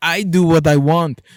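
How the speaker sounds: loud, slow, drawn-out put-on Austrian accent. Quoting Arnold Schwarzenegger smoking a stogie, in an Arnold Schwarzenegger impression. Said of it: "one of the best impersonations of Schwarzenegger I've ever heard".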